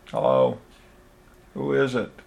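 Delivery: frail voice worn thin with age, weak. An old man asks who has come to see him, voice weak with age. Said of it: "his voice weak with age".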